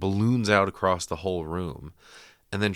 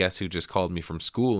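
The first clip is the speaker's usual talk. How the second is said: ordinary delivery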